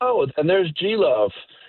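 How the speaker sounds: high showman stage announcer voice. Retelling how Jimmy brought the guest on stage: imitating Jimmy announcing. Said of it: "and Jimmy goes".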